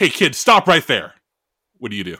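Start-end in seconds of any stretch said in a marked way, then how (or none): 0.0-1.1 high, loud, angry yell. Voicing an angry man who yells at a kid on a bike: yelling at a kid. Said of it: "and yells at you".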